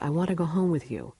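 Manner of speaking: ordinary talk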